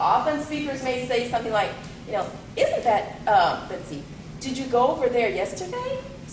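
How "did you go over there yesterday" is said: rising question-like tune on yesterday. Example of a General English question: rising pitch on yesterday. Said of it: "So you can have a rise".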